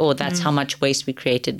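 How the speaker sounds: plain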